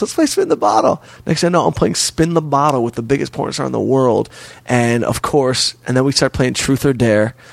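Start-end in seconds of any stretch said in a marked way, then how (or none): 0.0-1.0 high, put-on girly woman's voice. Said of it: "She goes".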